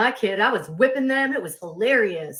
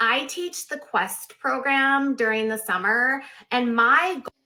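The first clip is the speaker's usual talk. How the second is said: put-on slow, drawn-out Valley Girl drawl; 3 semitones higher than usual. Retelling a man's stage pitch at a conference: Valley Girl voice. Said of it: "this guy comes on stage and goes".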